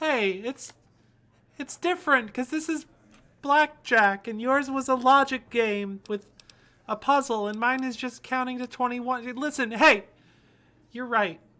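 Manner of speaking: loud heated yelling. A character arguing back at another person, yelling. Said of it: "I'm sorry for yelling at you".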